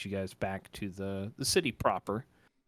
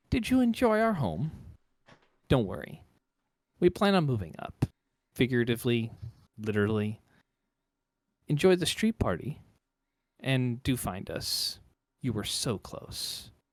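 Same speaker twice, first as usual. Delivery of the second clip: loud, swooping, mocking and taunting woman's voice; 4 semitones higher, 5 dB louder than usual. Narrating a game, voicing a woman speaking inside a character's head: taunting female voice. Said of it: "Very taunting in the way that she speaks".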